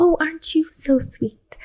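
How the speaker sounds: kind, sugary, high voice like a primary teacher's. Explaining the voice people adopt in leadership, demonstrating a kind, soft primary-teacher voice. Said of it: "we actually call it the primary voice".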